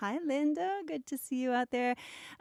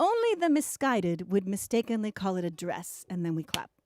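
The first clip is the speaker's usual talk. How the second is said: ordinary talk, nothing marked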